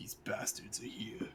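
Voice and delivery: low, hushed, breathy whispered mumble. Voicing a character who mutters in draconic on seeing enemies: mumbled line. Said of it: "I'm gonna mumble".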